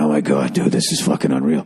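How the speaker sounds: low, awed, marveling stage whisper. Retelling how the group whispered while eating the barbecue: retelling a whisper. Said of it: "We're like whispering".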